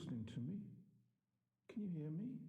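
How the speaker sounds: sad calling out. Pleading with a silent player to make a choice: sad. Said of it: "He sounds so sad".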